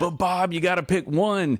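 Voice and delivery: mock screaming, acted screaming voice. Retelling a reaction to reading a guest's bio: imitating inner voice screaming. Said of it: "my inner Southern Baptist upbringing was screaming".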